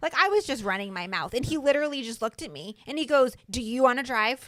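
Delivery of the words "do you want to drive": put-on raised voice, louder. Retelling what the driver said to the backseat-driving speaker, imitating a raised voice. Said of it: "you raised your voice at me".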